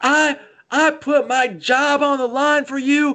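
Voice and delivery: very high, very slow, drawn-out screaming. Retelling how a k stopped the whole practice: imitating a k screaming. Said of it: "he just starts screaming".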